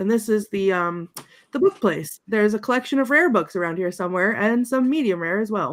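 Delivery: normal talking voice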